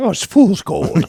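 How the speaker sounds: put-on Irish accent, very high-pitched. Asked by a fantasy football co-host to say it in his Irish voice. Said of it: "in your Irish voice".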